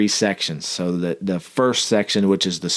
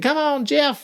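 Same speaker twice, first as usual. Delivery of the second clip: mock, very high, encouraging cheering yell. Retelling a commander yelling encouragement from across the field: imitating someone yelling encouragement. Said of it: "she'd start yelling at the next person".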